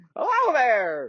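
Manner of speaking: put-on very high, squeaky, crazy old-man voice. A storyteller voices the old smith as visitors come in, in a Sir Smith crazy old-man voice. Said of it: "He's a crazy old man".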